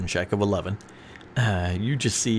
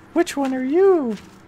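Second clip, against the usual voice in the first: very high, raised, put-on creature voice; 5 dB louder than usual. Voicing a character's reply in broken common, high voice. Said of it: "I love when [name] tries to do a high voice".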